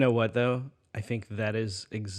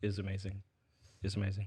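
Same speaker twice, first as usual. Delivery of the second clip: plain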